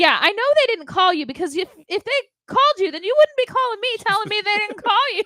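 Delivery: put-on heavy New York accent. Retelling what a woman on the phone told them: thick New York accent. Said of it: "definitely from New York, she had a thick accent".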